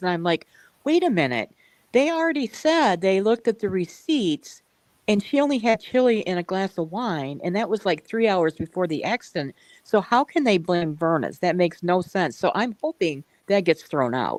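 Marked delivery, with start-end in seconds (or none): none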